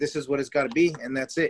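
ordinary delivery

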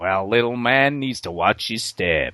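low, western cowboy voice. Speaker repeats the way he says the line, in a cowboy voice. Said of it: "he says it like".

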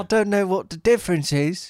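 very high-pitched put-on British accent. Retrying an imitation after being told to go higher: higher-pitched put-on british voice. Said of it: "you have to go higher than that".

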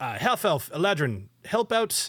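high call, pitch climbing as it goes. Game master voicing a captain calling over to the players' characters: yelling. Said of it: "He yells over to uh".

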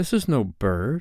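scared, frightened, fearful voice. Narrating a story, reading a character's line after a terrible silence in a scared voice. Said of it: "he said in a scared voice".

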